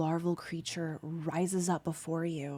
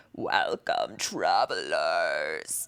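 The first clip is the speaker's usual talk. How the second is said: very deep, loud, gulping, spitting, gurgling monster voice; 12 semitones lower, 5 dB louder than usual. Narrating a scene where a slimy creature greets the travelers, gurgling, spitting creature voice. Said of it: "his voice gulps and gurgles and spits".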